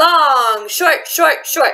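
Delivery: loud, full-voiced, rhythmic chanting delivery. Teacher demonstrating a rhythm for students in her loud voice. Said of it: "So my loud voice is".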